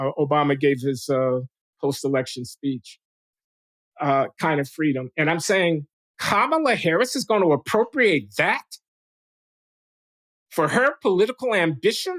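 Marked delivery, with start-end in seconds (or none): 6.2-12.2 scornful sneering voice, pitched up. Questioning whether a politician will appropriate a historical theme, with a sneer. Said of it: "I say it with a sneer".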